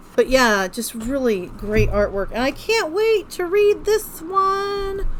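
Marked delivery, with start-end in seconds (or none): 2.3-5.1 sudden, very high, squeaky, slow, eager voice. Showing off books to viewers, high-pitched voice. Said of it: "I don't know why I got a high pitched voice there".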